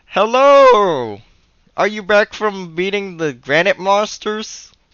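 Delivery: unique walrus-creature voice, very high and loud. Speaker recounts how a game character greets you, in Wally the walrus man voice. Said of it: "I gotta practice his voice because his voice is kind of unique".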